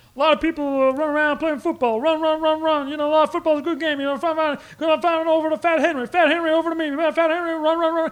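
very high, booming, loud character voice. Imitating a Cosby bit from an old sketch record: Bill Cosby impression. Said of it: "And it sounded just like Bill Cosby".

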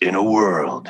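movie trailer announcer narrator voice. A guest offers to do the movie trailer voice: movie trailer voice. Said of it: "the trailer voice".

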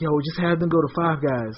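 ordinary delivery

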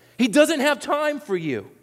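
shrill, very high-pitched yell. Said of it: "they're yelling at them".

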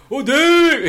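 excited high-pitched shout. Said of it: "And he was like".

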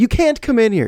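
put-on very high, frantic shrieking scream. Retelling being stopped at a media room door by Tracy Wolfson: imitating her frantic scream.

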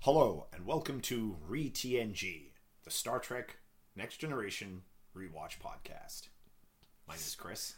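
very low, grave, solemn, serious announcer tone. Host opening a Star Trek rewatch podcast, very serious intro tone. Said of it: "you sounded really serious there".

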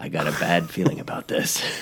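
breathy, half-whispered, near a whisper. Joking about an air raid warning, doing a Harrison Ford impression. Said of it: "better than Harrison Ford's".

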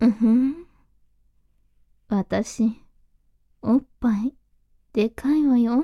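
sultry, low, slow seductive voice. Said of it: "っていうステレオタイプの、なんかセクシーお姉さん".

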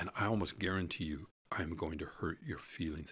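normal talking voice

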